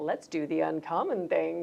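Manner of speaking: plain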